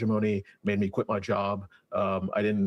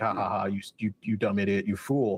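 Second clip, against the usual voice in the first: acted-out mocking laughter. Retelling a book scene where a river laughs at a crying man: voicing a river laughing mockingly. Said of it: "the river's just, like, laughing at him".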